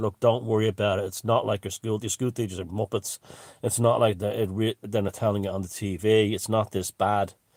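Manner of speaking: ordinary talk, nothing marked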